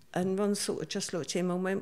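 normal talking voice

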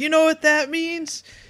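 very high, put-on, all-excited voice. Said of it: "he's all excited and everything".

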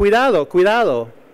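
loud, high yelling in Spanish.

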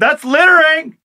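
high, slow, outraged yell. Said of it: "And then he go".

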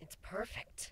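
whispered mutter, voice on verge of breaking. Kuno, receiving a red collar stitched with her name: muttered, voice near cracking. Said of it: "Kuno muttered, not trusting herself to speak any louder without her voice cracking".

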